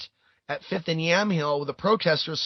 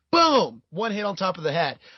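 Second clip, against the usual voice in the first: ordinary talk, nothing marked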